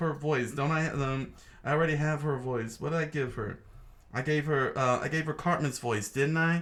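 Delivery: plain reading voice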